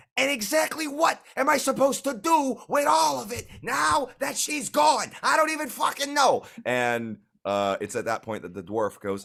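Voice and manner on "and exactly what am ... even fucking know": very high, loud, shrill enraged screaming. Voicing an angry halfling shopkeeper: halfling screaming in anger. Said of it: "the slightly shorter halfling is screaming".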